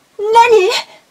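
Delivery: high, loud startled nani.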